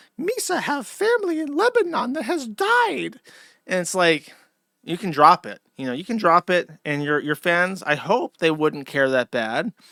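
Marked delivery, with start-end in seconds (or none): 0.2-3.2 very high, squeaky, goofy alien voice. Mocking a woman who stays in character talking to fans, Jar Jar Binks voice. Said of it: "Speaking like Jar Jar Binks".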